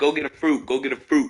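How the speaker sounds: ordinary talk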